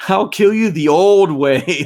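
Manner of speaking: put-on Brooklyn or Boston accent. Retelling a video of a mom losing it, doing her brooklyn or boston accent. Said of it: "it's like a Brooklyn or Boston style".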